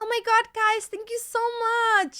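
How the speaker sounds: very high put-on e-girl voice, fake sweet. Imitating her own old stream voice, imitating her old higher voice. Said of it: "I was talking, like, a higher voice".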